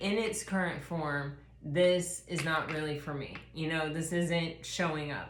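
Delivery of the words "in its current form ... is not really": ordinary delivery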